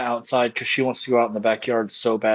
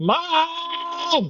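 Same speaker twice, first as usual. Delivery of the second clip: mock screaming cat voice, higher. Imitating the boy cat on the perch looking down: imitating a cat screaming.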